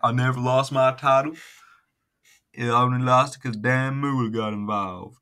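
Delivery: put-on Southern drawl. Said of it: "got my boom boom state".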